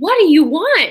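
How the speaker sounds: put-on screaming voice. Retelling a scene from The Notebook, imitating Noah screaming. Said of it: "screaming at her".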